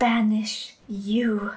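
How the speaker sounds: menacing, with a dangerous edge. Repeating his words as the crystal in his hand fills with dark energy, dangerously soft. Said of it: "said again in a dangerously soft voice".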